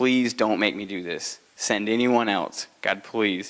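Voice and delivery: put-on desperate, pleading tone. Retelling Moses pleading with God, imitating desperate pleading. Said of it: "he's just desperate".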